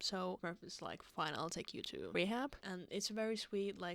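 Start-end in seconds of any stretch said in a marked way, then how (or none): none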